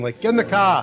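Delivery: mock yelling. Explaining his accent only comes out when yelling, retelling a yell. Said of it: "only when I'm yelling".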